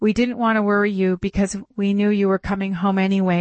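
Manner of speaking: ordinary delivery, nothing marked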